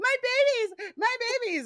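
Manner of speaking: mock screaming woman voice, very high-pitched crying. Recounting a movie scene, imitating a woman screaming. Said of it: "She's like screaming".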